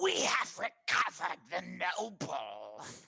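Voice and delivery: put-on swooping goblin creature voice. The speaker voices a group of goblins reporting back, in a goblin voice. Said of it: "trying to emulate the goblins".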